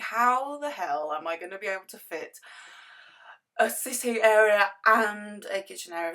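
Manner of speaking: words stretched by stifled yawn. Recalling a worry about the layout, the speaker talks through a half yawn. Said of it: "my voice went weird there because I kind of like half yawned".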